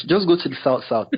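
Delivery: ordinary talk, nothing marked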